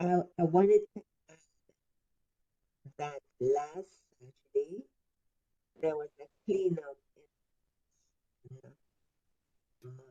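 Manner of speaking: careful, clear delivery, taking care over each word. Repeating an update on a bad call line: speaking slowly. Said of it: "let me speak slowly".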